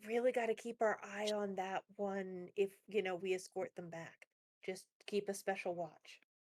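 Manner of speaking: very soft, quiet whisper. Whispering in character to a companion so the captives won't hear, quiet whisper. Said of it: "I whisper to Uriel, like real quiet".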